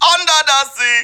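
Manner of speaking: very high pitch with a held-nose, nasal accent. Showing the Sebastian accent from The Little Mermaid: Sebastian the Crab accent. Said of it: "I love doing his accent".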